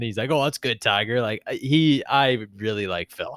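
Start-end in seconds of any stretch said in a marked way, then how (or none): 0.3-1.2 playful, cheeky, teasing trash-talk tone. Retelling a putt being made, imitating Phil Mickelson chirping. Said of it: "he's chirping".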